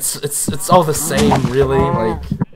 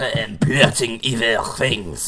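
put-on French accent; 3 semitones lower than usual. Answering someone who asked where you are, in a French accent. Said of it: "Why do you do French accent for that?".

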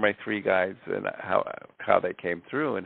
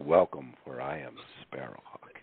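very deep character voice, dropped as low as possible; 6 semitones lower, 5 dB quieter than usual. Channeling Sparrowhawk, the guardian of the galaxy: Sparrowhawk voice, very deep. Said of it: "my voice drops three octaves down, like".

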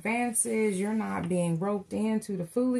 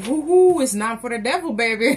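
very loud whoop through laughter; 11 dB louder than usual. Reading a tarot card aloud, then apologizing for laughing: laughing while talking. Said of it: "I did not mean to laugh like that".

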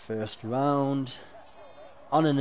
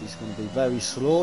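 plain

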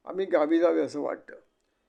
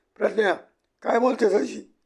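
shouting, higher and louder; 6 semitones higher, 4 dB louder than usual. Reading a family story aloud, one character shouts at another: shouting. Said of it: "Shripad ओरडला".

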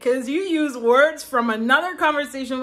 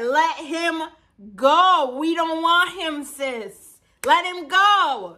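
mock screaming, higher and slower; 4 semitones higher than usual. Recalling watching a scene unfold, retelling screaming at the TV. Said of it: "I'm screaming at the TV like".

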